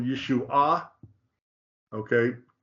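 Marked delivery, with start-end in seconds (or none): 0.0-0.9 Yeshua said with stress on the third, final syllable. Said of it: "makes the accent on the third syllable".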